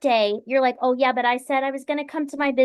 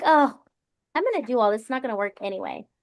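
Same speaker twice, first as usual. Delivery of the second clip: exhausted, tired, doubtful tone. Retelling how past work days began: imitating own doubtful tone. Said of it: "I used to come doubtful".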